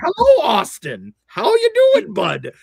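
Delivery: very high, loud, sing-song put-on Midwestern twang. Acting out a phone call greeting austin, in a put-on midwest accent. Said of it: "why I sound like I'm from the Midwest".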